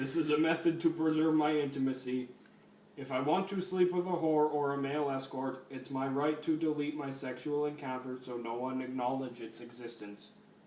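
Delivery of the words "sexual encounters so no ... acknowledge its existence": normal talking voice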